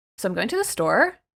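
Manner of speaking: statement rising like a question on store. Giving a couple of examples of uptalk, uptalk rise on 'store'. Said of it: "so if I uptalk would be like".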